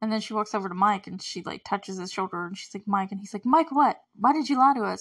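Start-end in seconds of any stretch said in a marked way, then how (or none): 3.5-5.0 harsh, high, loud accusing outburst. Recapping a show scene, acting out Mike turning on Eleven: retelling Mike yelling. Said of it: "he starts yelling at her".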